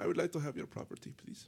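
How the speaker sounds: fake, poorly done German accent. Acting out an enemy who shows up at the door, bad German accent. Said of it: "Bad German accent".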